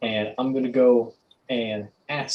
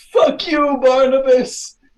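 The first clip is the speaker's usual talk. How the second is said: full-blast, high, shrill, very loud scream; 10 dB louder than usual. Player acting out their character yelling at Barnabas in Sylvan, yelling. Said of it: "I'm just gonna yell at them".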